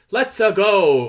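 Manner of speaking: loud, high video-game hero shout. Retelling a trailer line, imitating Chris Pratt's Mario voice. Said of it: "if he's gonna do stuff like".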